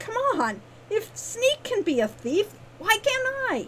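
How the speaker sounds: very high, frustrated, exasperated, climbing exclamation. Ren protests to Bruno after he tells her to go home: frustrated exclamation. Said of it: "Ren exclaimed in frustration".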